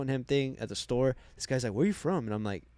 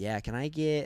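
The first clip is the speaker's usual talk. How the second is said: put-on mocking American accent; 2 semitones higher than usual. Retelling how the lady there mimicked the accent: imitating someone mocking an american accent. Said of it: "Are you mimicking me right now?".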